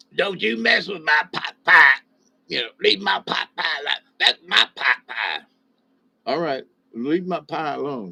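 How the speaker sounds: put-on cartoon child voice. Resisting a second slice of pie, the speaker does a poor Cartman impression. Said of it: "That was a poor Cartman".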